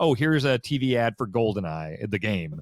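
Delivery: plain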